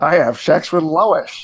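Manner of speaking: mock cartoon father voice. Doing a Peter Griffin impression for friends: Peter Griffin voice. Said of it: "I draw spot on Peter Griffin".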